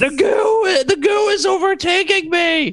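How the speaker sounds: acted screaming. A game character calls to a companion as a giant monster attacks, screaming in character. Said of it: "And I'm just screaming".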